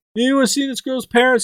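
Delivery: high, mock yell calling out.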